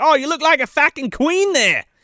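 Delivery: clearly Australian, not British. Retelling a film scene, quoting the character Cliff: imitating Cliff's Australian accent. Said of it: "definitely an Australian accent and not a British accent".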